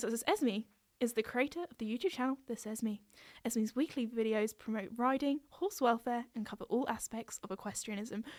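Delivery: soft news-anchor style reading voice. Reading her own third-person bio aloud, in a newsreader voice. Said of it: "Do you like my newsreader voice?".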